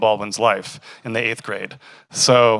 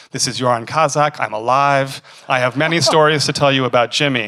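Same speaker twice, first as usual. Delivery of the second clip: put-on hoarse, raspy French accent, phone-like; 2 semitones higher, 3 dB louder than usual. Recalling a surprise phone call to their Brooklyn apartment, imitating Joran Kazak's raspy French accent. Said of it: "raspy French accented voice".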